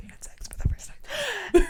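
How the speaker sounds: hushed, soft whisper. Repeating the sentence just said, now whispering. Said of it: "Why did you whisper that?".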